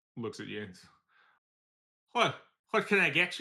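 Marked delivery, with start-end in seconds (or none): 2.1-3.4 put-on Irish accent, pitched up. Voicing a bartender who looks at the group and greets them: Irish bartender accent. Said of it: "Oh no, it's Irish".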